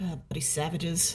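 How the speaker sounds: very quiet, soft grumbling mutter under breath. Narrator voicing Norman after he gets bumped in a rough tavern: quiet muttering under breath. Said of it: "very quietly under his breath mutters like".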